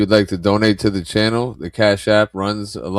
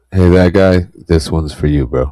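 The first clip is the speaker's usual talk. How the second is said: put-on, artificially deepened, loud deep voice; 3 semitones lower, 6 dB louder than usual. Talking about legends lost in the past year, in a put-on deeper voice. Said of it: "I like how you made your voice a lot deeper".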